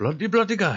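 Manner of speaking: very high, loud put-on Indian English accent. Praising accents he loves, the speaker demonstrates an indian english accent. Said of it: "That sort of accent".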